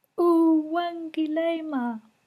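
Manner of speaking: very high, tiny little snail voice. Storyteller voicing a tired snail speaking before gathered animals and people, in tiny little snail voice. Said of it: "in her tiny little snail voice she said".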